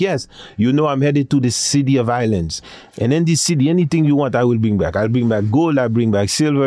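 put-on Haitian accent.

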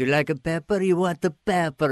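put-on a thick, fanatical, over-the-top Italian accent. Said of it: "these fanatical Italian pepper guys".

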